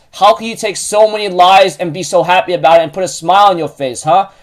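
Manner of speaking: plain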